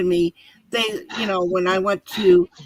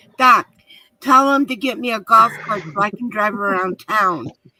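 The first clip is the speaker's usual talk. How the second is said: put-on loud calling out. Speaker retells yelling at their son at the doctor's office, retelling a yell. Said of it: "I was yelling at him".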